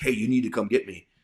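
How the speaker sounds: steady, loud calling-out holler. Recounting being under fire, speaker quotes a wounded man calling to him: retelling a holler. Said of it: "He hollered out like".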